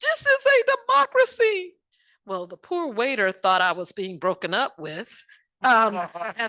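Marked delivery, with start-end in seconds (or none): 0.0-1.7 mock very high, loud, sobbing bawling wail. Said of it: "literally bawling, crying out".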